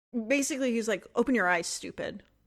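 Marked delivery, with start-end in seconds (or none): 1.2-2.2 acted-out, mock-defiant tone. Retelling a story and voicing the kid's answer, mock-defiant. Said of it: "it's that tone".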